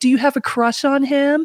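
high, mocking, teasing yell. Retelling a girl at school laughing at a drawing: imitating a girl yelling.

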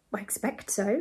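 ordinary delivery, nothing marked

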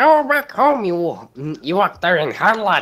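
failed attempt at funny put-on old man voice. Trying to shout at an opponent in a funny old man voice. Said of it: "I can't do the, the funny old man voice".

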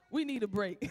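speaking while breaking into laughter mid-sentence.

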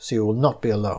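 ordinary delivery

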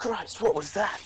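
put-on slight Australian accent. Seeing something flash across the street ahead of the group: nearly australian accent. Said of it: "He almost went Australian".

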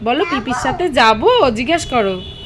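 put-on high, loud, sweet sing-song baby talk.

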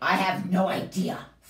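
snorting delivery. A narrator reads one creature's reply to the strange little creature, snorted. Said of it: "snorted the creature".

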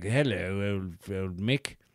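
put-on plummy, stuffy upper-class English accent. Like you're impersonating a stuffy upper-class man greeting a working-class stranger with a haughty, clipped tone. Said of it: "kind of like posh English".

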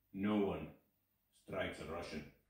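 mock totally flat, expressionless, low and slow. Retelling a russian man's reply to an offered fist bump, imitating a deadpan reply. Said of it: "totally deadpan".

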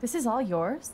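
surprised, sounding unable to believe it.

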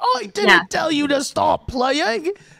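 very high, loud, slow, drawn-out put-on Australian accent. Retelling what the king says to the clarinet player: imitating an Australian accent. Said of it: "I think he's, like, Australian".

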